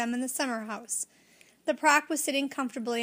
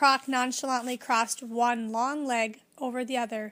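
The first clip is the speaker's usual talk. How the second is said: usual speaking voice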